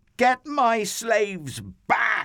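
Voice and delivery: very high, loud, shrieking screech. Reading a story aloud, Pharaoh charges after the fleeing people: screeching. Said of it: "he screeched".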